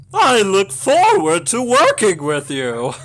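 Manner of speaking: very high, very loud, screeching cartoon computer villain voice. Asked to read the next line in character, doing Mother Brain voice. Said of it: "Can you do the next line in Captain and Mother Brain's voice?".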